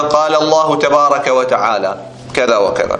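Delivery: plain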